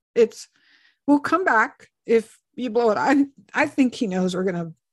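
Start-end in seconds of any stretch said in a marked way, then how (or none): none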